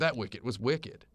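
ordinary talk

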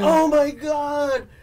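put-on high, slow, loud, scared old man gasp. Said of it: "He's so scared".

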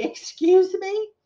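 very high, harsh, quizzical tone. Retelling a buyer's reply to her remark, imitating someone speaking harshly. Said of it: "he said a little harshly".

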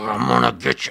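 strained, grating, rough yell straining the throat. Listing kinds of performance voices to a co-speaker, demonstrate the throat-straining yell. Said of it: "Like that hurts your throat".

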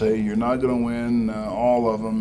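normal talking voice

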